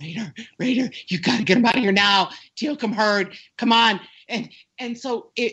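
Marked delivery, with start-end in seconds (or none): 0.0-4.0 put-on breathless, out-of-breath pleading voice. Retelling how a trainee ran in with a warning: imitating someone out of breath. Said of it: "this trainee is all out of breath going".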